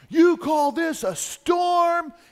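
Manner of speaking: mock, high, drawn-out yelling scream. Retelling a movie scene where a character screams at god: imitating a scream. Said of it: "he screams at God".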